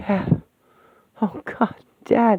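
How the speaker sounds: about-to-cry voice. Hearing their dead father's confession; on the verge of tears. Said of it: "I'm gonna cry".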